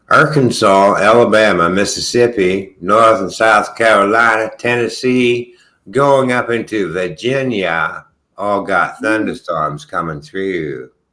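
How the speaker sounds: American Southern accent. Giving a weather rundown, the speaker lets a southern accent come through. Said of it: "there's my southern accent".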